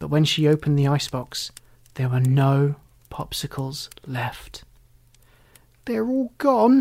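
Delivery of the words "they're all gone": high-pitched cried-out exclamation. Narrator reads Alley Cat finding no popsicles left in the icebox, crying out. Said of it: "cried Alley Cat".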